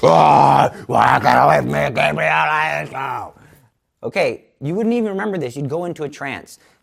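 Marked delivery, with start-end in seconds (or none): 0.0-3.3 very slow, rough, loud, low animal growl. Describing how possessed people talk, the speaker demonstrates a loud, growling animal voice. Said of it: "They'll talk in a loud, growling voice like an animal".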